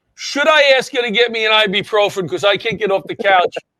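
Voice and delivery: plain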